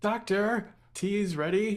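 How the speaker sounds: loud call from afar. Picturing her own off-screen cameo in the show, yelling from far away. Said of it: "you hear me yelling".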